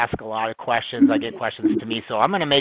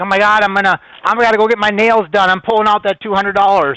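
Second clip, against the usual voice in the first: mock freakout, higher and slower; 8 semitones higher, 9 dB louder than usual. Retelling a first $200 crypto profit reaction, imitating someone freaking out. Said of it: "She's freaking out".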